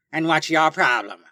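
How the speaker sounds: taunting, mocking copycat parroted echo. A supervillain repeats her enemy's question straight back at him, in a mocking voice. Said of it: "repeating what my enemy says in a mocking voice".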